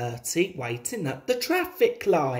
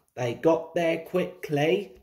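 usual speaking voice

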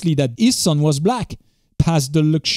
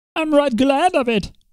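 very high, complaining, high-pitched whine; 10 semitones higher than usual. Narrator voicing the old man answering the others, whining. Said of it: "whined the old man".

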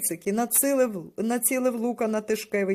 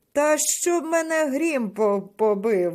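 out-loud exclamation, crying out; 4 semitones higher, 4 dB louder than usual. A man, contradicted by the boys, answers them exclaiming. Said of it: "вигукнув Тишкевич".

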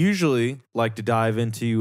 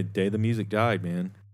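ordinary delivery

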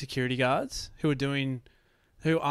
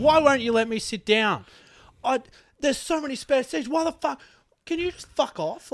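very high, loud, furious angry rant; 11 semitones higher, 6 dB louder than usual. Retelling a woman going off at a security guard, retelling an angry tirade. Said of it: "She went on a tirade".

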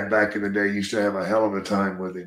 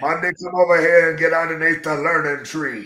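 put-on scolding wrestler voice, pitched higher; 8 semitones higher, 3 dB louder than usual. Retelling how Ernie Ladd scolded Bundy: Ernie Ladd impression. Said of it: "I've heard Bruce Pritchard do that same impression".

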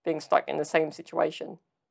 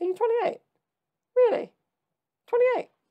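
squeaky, very high-pitched put-on voice. Imitating people who doubt the speaker's age: imitating people in a high-pitched voice. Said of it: "that high-pitched voice".

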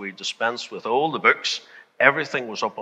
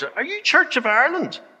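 mock carrying, loud, very high call-out; 3 dB louder than usual. Retelling how an unsure man asked people their church: imitating a fairly loud voice. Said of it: "in a fairly loud voice".

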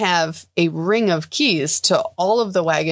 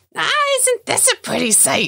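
shrill, sing-song, very high swooping gloating villain cackle; 14 semitones higher than usual. A narrator voices a halfling woman surrounded by rats, cackling. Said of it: "She cackles".

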